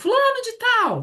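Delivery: very high-pitched shouted call-out. Retelling how the clinic attendant called patients: imitating someone shouting a name. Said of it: "E aí a moça vinha e gritava assim".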